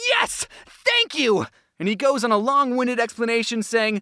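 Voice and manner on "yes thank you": mock shrill, very high, eager, excited yell. Retelling a man in a suit picked to speak, imitating a scream. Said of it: "The guy stands up screaming".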